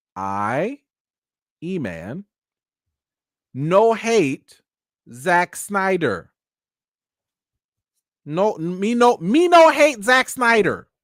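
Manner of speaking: very slow, word by word. A reviewer addressing viewers before his critiques, saying it very slowly. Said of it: "I'm also going to say this very slowly".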